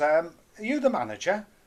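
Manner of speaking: put-on London accent. Tony, a manager, retells a caller asking for the manager, in a London accent. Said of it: "this London voice says".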